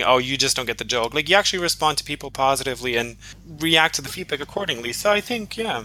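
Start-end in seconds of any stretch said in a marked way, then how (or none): none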